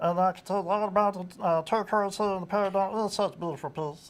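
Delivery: put-on high cartoon character voice. Asked about past cartoon voice work, demonstrating a cartoon character voice. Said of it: "I used to do a voice that sound like this".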